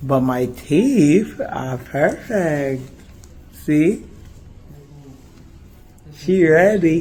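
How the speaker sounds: slow, thick-tongued, numb-mouthed speech. Filming at the dentist after getting veneers, speaking with a numb mouth. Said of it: "my mouth is numb and my tongue feels like it's three times the size".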